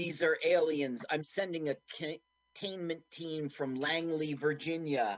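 plain

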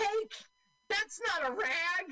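mock indignant character voice, very high, slow squeal. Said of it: "he goes".

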